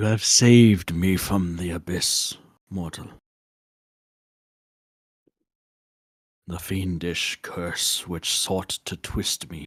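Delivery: deep, reverberating, echoing otherworldly creature voice. The Kirin addresses the one kneeling before it, in a low reverberating creature voice. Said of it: "lower pitched, reverberating sound as the creature speaks".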